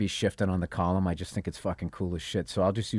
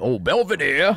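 put-on cartoon Southern accent, higher and louder; 8 semitones higher, 9 dB louder than usual. Recalling a cartoon voice used in a movie: Mel Blanc Southern cartoon voice. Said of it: "Mel Blanc would do that".

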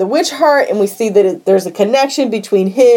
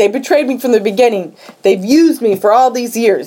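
put-on distressed, aggrieved, wounded lament. Retelling a scene where K-Dog wakes up betrayed: imitating upset K-Dog. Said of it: "he's really upset".

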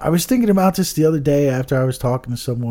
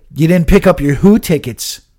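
mock cross, angry, accusing man's voice; 4 semitones higher, 8 dB louder than usual. Retelling what a guy said at ticket pickup, imitating an angry man. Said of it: "He was, like, angry".

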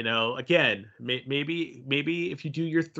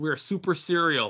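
ordinary delivery

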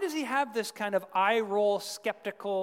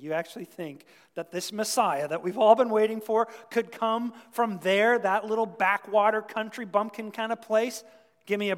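usual speaking voice

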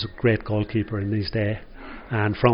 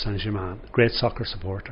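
ordinary delivery

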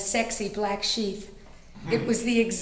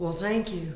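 put-on lazy, easygoing Oklahoma drawl, vowels stretched; 2 semitones lower than usual. Telling about meeting a man, quoting his thanks in his Oklahoma drawl. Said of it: "in his Oklahoma drawl".

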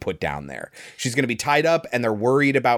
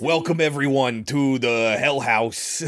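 imitated New York accent. Describing a man at the Hell House, the speaker quotes him in a New York accent. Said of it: "this New York accent. It's like".

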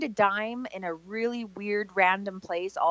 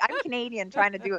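normal talking voice

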